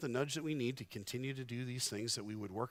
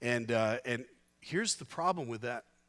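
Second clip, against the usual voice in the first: ordinary talk, nothing marked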